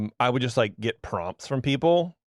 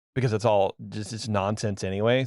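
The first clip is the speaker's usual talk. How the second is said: plain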